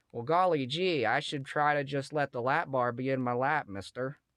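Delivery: put-on hokey, corny, gee-whiz old-sitcom kid voice. Imitating Beaver getting off a roller coaster: hokey old sitcom kid voice. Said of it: "if Beaver rode Sky Rush and got Gap".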